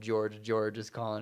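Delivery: ordinary talk, nothing marked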